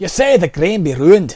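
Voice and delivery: put-on Scottish accent. Voicing a character's single line, in a Scottish accent. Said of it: "There's our Scottish accent".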